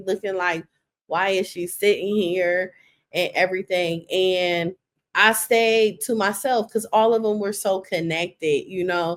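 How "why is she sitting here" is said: ordinary talk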